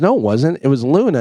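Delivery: normal talking voice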